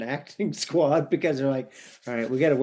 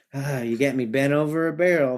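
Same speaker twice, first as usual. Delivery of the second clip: acted, downcast, saddened, defeated tone. Retelling a movie scene where a character looks down: imitating a saddened character. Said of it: "he kinda looks down like he's saddened by it".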